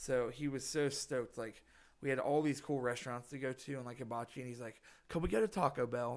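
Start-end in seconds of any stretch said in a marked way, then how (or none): 5.1-6.2 bad, fake, overdone put-on British accent. Quoting a guy from the UK, in a terrible British accent. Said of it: "I know it's a terrible accent".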